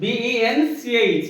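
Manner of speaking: letters spelled out one by one, very slowly.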